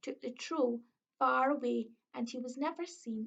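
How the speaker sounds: ordinary delivery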